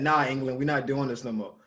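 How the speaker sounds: ordinary talk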